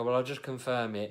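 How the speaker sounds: ordinary talk, nothing marked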